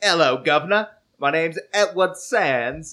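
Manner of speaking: fake Cockney, a bit high. Imitating a man from Ohio who faked Cockney: fake Cockney accent as Edward Sands. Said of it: "talked with a fake Cockney accent".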